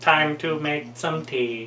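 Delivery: soft, machine-like robotic computer voice. Retelling what they said when everything suddenly stopped, computer voice. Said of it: "I said in the computer voice".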